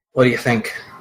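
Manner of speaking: in-character stage whisper. Voicing Meracer asking Damien a question: whispering in character. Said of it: "Meracer whispers to Damien".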